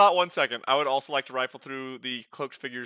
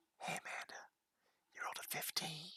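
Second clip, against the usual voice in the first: whispered and quieter; 4 semitones higher, 24 dB quieter than usual. Telling amanda privately what she rolled, whispering. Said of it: "That's what I'm whispering to you".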